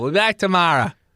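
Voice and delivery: put-on, mock Boston accent. Coaching the others on how to do the accent, in a Boston accent. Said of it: "Now say Braintree".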